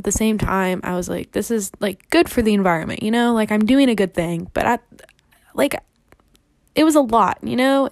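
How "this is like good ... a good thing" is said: plain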